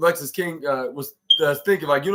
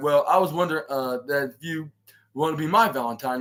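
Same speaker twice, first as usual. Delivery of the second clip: plain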